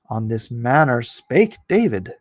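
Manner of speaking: ordinary talk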